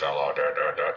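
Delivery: low-pitched, robotic voice. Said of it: "sound like a robot voice".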